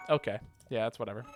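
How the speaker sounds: ordinary talk, nothing marked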